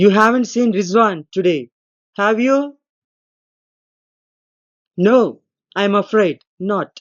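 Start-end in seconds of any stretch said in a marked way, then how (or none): 0.0-2.8 voice climbs in rising tone on have you. Explaining question tags, the speaker gives an example question: rising tone on question tag. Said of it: "My voice, when it has come to have you, has gone up".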